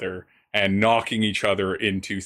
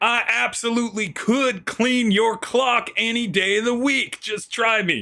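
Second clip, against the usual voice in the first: very high, heated, angry yell. Voicing the second man in an inn brawl shouting back: yelling back in a brawl. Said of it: "the other man is just yelling back".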